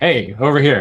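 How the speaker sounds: casual, easy calling out. Playing a character calling to merfolk to get their attention: yelling to get attention. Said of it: "by kind of just yelling".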